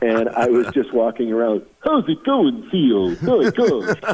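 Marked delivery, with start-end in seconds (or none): 1.8-3.1 put-on cartoon moose voice. Retelling greeting a coworker while walking around, in a Bullwinkle voice. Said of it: "is that Bullwinkle?".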